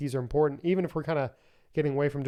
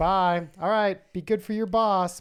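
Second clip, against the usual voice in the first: put-on tiny, sweet, cute, pitched-up little-girl voice; 5 semitones higher, 4 dB louder than usual. Retelling how the little girl says goodbye, in her little Lily voice. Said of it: "her little like Lily voice".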